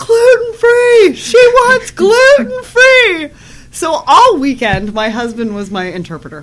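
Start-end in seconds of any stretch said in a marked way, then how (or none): 0.0-3.3 put-on man's yell, much higher, louder, slower. Speaker retells how a man who misunderstood her yelled out her request, retelling a man's yell. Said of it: "he yells out".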